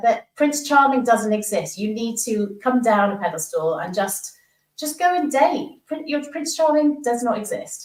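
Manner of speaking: normal talking voice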